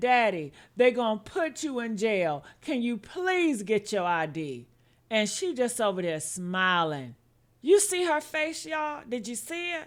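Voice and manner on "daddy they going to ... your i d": put-on tearful, pleading voice like a scared child. Retelling a child's crying plea to his father: imitating Kinston crying. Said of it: "While Kinston is crying, saying".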